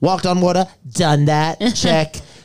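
small high tone, tossed off.

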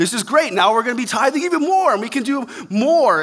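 very high, loud, thrilled excitement. Imitating people who give more as they are blessed: imitating excited givers. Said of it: "They get excited as God blesses them".

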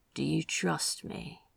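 hushed, low, quiet voice. Antonio asks Zachariah a question, in a low voice. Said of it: "Antonio said in a low voice".

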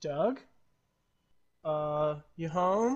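slow, puzzled, uncertain, confused tone. Voicing a confused Verby calling out at the cart: confused Verby voice. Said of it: "she looks confused".

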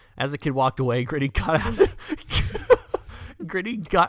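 talking through laughter. Reading a news story aloud to another speaker, laughing while talking. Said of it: "I'm sorry for laughing".

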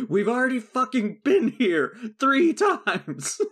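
acted, high-pitched, shrill, fed-up, furious screaming. Retelling a behind-the-scenes story, the speaker quotes an actress yelling at the guy with the map. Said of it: "she's yelling at the guy".

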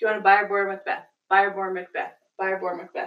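normal talking voice

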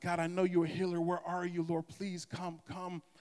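acted, tearful, desperate pleading tone. The speaker retells praying in their seat while sick, retelling a desperate plea to god. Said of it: "crying out to him".

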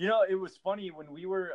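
ordinary delivery

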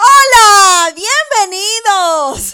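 very loud, very high, drawn-out, bursting with energy. Greeting listeners again after being asked for more energy: more energetic greeting. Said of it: "Pero con más ánimo, chica".

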